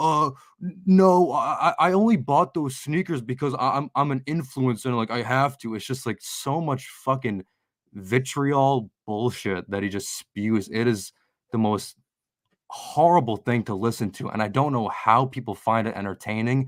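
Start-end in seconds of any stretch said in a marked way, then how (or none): 0.0-5.7 high, flustered mock streamer voice, stammering. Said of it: "he's like".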